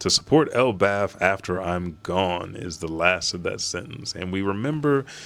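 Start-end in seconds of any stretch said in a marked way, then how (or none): none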